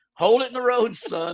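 play-acted very high, urgent-sounding shout. Retelling a bus skidding on a wet interstate: imitating dad yelling. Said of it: "my dad was yelling".

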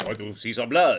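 fake Spanish accent. Re-enacting a badly dubbed movie scene, in a bad Spanish accent. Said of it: "we're going to be doing some bad Spanish accents".

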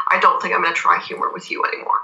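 deadpan delivery. Describing a TV episode, quoting a character's line to Vortis, retold deadpan.

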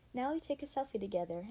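plain reading voice

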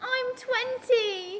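put-on very high, loud British accent, blurted out. Quoting how a line sounds on the rehearsal track, in a British accent. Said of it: "that was a really good British accent".

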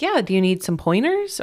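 put-on, faux-helpful, sarcastic tone. Retelling a past reply to a question about babies: imitating own sarcastic reply. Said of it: "I'm kinda sarcastic about that one".

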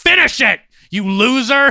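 shrill, booming heckling yell, very high and very loud. Imagining being the guy yelling at a shooter who keeps missing, mock yelling. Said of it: "that guy yelling at him".

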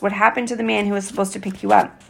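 plain reading voice

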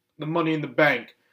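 ordinary delivery

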